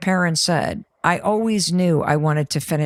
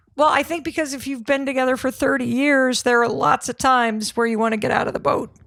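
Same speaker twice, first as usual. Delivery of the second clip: tearful, pitched-up speech through tears; 6 semitones higher than usual. Sharing advice about staying together, crying while speaking. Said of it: "why am I crying?".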